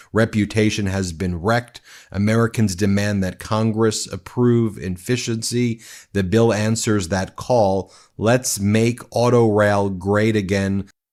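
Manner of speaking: plain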